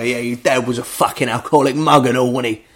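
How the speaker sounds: jeering, needling tough-guy gangster voice. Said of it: "I like when gangsters do that".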